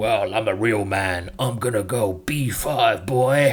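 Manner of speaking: put-on slow, drawled American cowboy accent. Explaining an aggressive chess plan, imagining what John Wayne would play, in a John Wayne cowboy accent. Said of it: "Sorry about my American cowboy accent".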